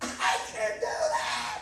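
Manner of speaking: put-on slow, high, drawn-out, overconfident drunken voice.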